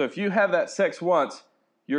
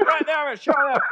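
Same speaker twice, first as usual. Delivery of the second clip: pitched-up, calling talking bird voice; 12 semitones higher, 3 dB louder than usual. Imagining what birds flying over would say: voicing a bird. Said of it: "birds that are flying over going".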